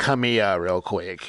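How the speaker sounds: put-on villain voice. Pitching a story idea to the other speaker, doing an Emperor impression. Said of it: "that that's a good impression".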